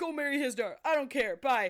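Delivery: imitated voice getting angry. Retelling a scene from a story where he gets mad: imitating a character getting mad. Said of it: "he gets mad and he's like".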